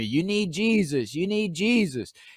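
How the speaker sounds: high-pitched yelling. Retelling a heckler in the second row: imitating a woman yelling. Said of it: "she just starts yelling at me".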